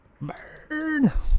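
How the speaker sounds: very high, gleeful, gloating cry.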